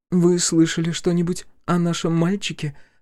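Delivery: hopeful, high-pitched tone. A mother asks the arriving visitors about her boy, hopeful. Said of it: "с надеждой спросила она".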